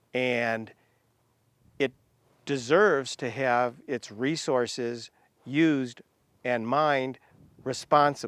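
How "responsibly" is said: responsibly set apart and leaned on with emphasis. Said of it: "Emphasis on responsibly".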